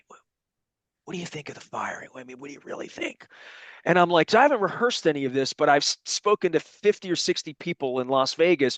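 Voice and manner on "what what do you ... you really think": barely-there hushed whisper. Retelling how people at an event whispered a question: imitating a whisper. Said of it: "they whisper at me".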